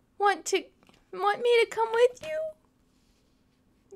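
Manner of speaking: very high, very slow, drawn-out hopeful call. Dexter calls after the other animals as they leave, calling out hopefully. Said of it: "He called out, hopefully".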